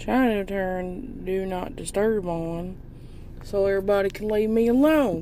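slipping into a country accent. Greeting the audience, then fumbling with the wrong button: slipping into a country accent. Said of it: "I don't know why I went to a country accent".

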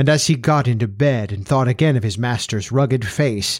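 ordinary delivery

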